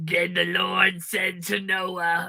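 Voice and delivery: heavy smoker's voice, like a veteran smoker. Reading a bible passage aloud with a partner, in a heavy-smoker voice. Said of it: "You sound like that queen who's been hosting shows".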